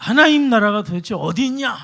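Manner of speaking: loud, high, demanding, challenging tone.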